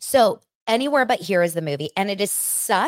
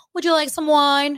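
teasing, mocking send-up in high put-on voice; 8 semitones higher than usual. Speaker complaining about someone's voice, then mocking Angie's voice. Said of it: "I don't even know how to do it. Like".

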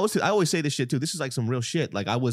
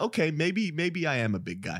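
usual speaking voice

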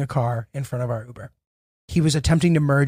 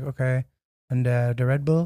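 imitated flat, deadpan monotone, quieter; 5 dB quieter than usual. Retelling an airport purchase, mimicking the woman serving the speaker, flat monotone. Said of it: "she's just like very monotone".

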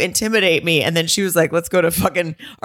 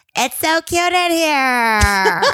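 put-on high, very slow, stretched-out baby voice; 9 semitones higher than usual. Retelling a restaurant voiceover, imitating Hannah's baby voice. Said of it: "She just did baby voice".

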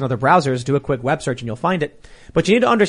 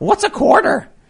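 mock cartoon parody voice, very high and squeaky; 4 dB louder than usual. Retelling a cartoon joke in a car: Family Guy's Bill Gates voice. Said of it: "And he goes".

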